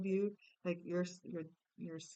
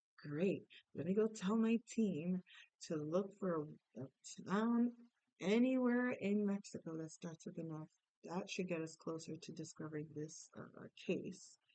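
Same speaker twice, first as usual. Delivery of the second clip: ordinary delivery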